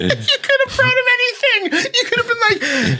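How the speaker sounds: very high, swooping, teasing mock voice.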